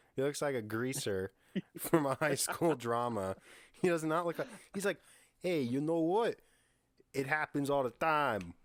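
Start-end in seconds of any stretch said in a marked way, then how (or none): 5.5-8.5 put-on wiseguy, mob-tough mobster voice, Italian accent. Describing how an actor talks, imitating an Italian mobster voice. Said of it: "He's just like an Italian mobster".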